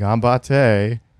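mocking, sarcastic tone. Showing how to say good luck with an eye roll: sarcastic with an eye roll. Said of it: "with an eye roll and be like".

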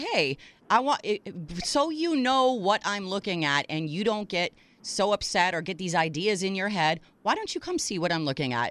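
ordinary delivery

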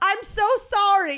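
play-acted, high-pitched hollering yell. Retelling a man's yelled apology while the speaker was in pain, retelling his yell. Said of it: "he yelled".

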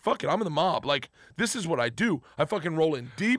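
ordinary talk

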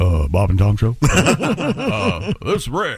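put-on Southern accent. Reading a listener's tribute, quote the caller character Rick's deep quiet Southern voice. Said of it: "in a deep, quiet Southern voice".

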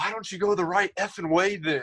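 high, angry, scolding yell heard from the background. Retelling a teammate yelling from the background: imitating Aaron yelling. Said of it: "letting Aaron yell at you".

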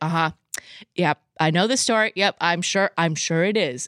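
ordinary talk

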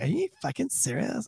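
tough, street-tough gangster attitude. Imitating a woman from a clip getting confrontational: imitating a gangster attitude. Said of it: "a little gangster starting to come out".

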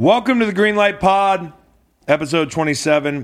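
shouting. Opening the podcast episode with more energy: yelling. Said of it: "You're yelling".

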